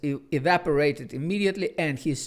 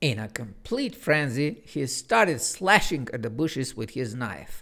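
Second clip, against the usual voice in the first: plain reading voice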